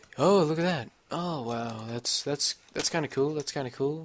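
mock bored commentator voice. Mimicking a game commentator from a video watched earlier, imitating a bored commentator. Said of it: "he just sounded so bored".

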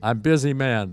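ordinary delivery

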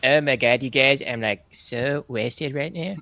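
acted cartoon child voice. Streamer imagining coming onto the stream drunk someday: Cartman voice. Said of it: "in my old Cartman voice".

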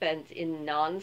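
ordinary delivery

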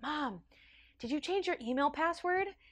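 quiet hushed half-whisper. Retelling tiptoeing out at midnight to ask mom something: retelling a half-whisper. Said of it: "I whisper to her".

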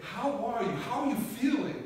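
high, beaming, big-smile voice.

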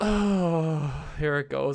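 shaky, quivering dread with a drawn-out oh. Playing a game, about to try opening a door, shaking. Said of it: "I'm shaking".

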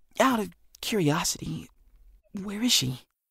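whispering. Reading a story aloud, a boy asks his friend where she is: whispering. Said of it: "Jack whispered".

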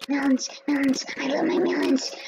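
unsettling, creepy, eerie tone. Playing a game with another player, talking about melons: mock creepy voice. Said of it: "That sounds so creepy".

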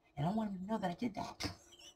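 hushed, very quiet half-whisper. Telling about watching their son drive while the son is present, half-whispering. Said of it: "I'm whispering because he's here".

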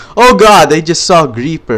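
loud, high startled shout.

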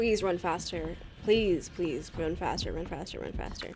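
very quiet, very low, hushed panicked pleading. Player who can't find the library, begging to run faster: stressed, frantic pleading. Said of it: "I'm stressed out".

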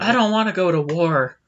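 put-on flat, plain monotone voice. Acting out a character's reaction while recapping a scene, in a flat monotone. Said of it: "The very monotone, like, plain, voice. Flat".

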